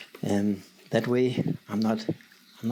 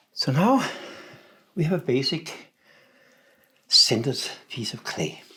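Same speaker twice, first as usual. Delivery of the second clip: breathless, higher; 3 semitones higher, 4 dB louder than usual. Centering a big lump of clay on the wheel, out of breath. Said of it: "If I sound a little bit out of breath".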